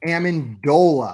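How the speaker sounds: Amendola with stress on the dole syllable. Giving the correct quiz answer Amendola: stress on dole in Amendola. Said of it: "with the emphasis on the dole".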